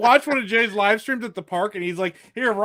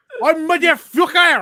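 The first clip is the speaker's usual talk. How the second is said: mock French accent, higher and louder; 7 semitones higher, 6 dB louder than usual. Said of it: "she tried to make it sound French".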